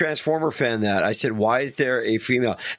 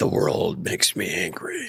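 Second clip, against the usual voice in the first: deep, guttural, demonic voice from the throat; 6 semitones lower than usual. Showing another speaker how to say their line: demonic lower guttural voice. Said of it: "demonic lower guttural voice".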